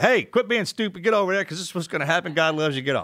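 preaching, straight-talking tone. Contrasting how a team guy talks: imitating a team guy. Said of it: "And a team guy be like".

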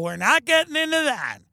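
play-acted, chuckle-laced, laughing through the words. Imitating an aunt dodging a topic: imitating laughing while talking. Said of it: "she's gonna laugh and go".

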